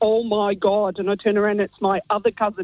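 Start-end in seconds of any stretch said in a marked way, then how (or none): 0.0-1.0 put-on very thick Derry accent, much slower. Retell what you heard your other cousin say in the bathroom, in a really thick Derry accent. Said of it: "in a really thick Derry accent".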